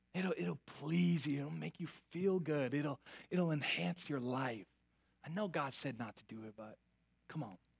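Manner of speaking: mock tempting whisper. Voicing the enemy who whispers to us: imitating the enemy whispering. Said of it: "he whispers to us".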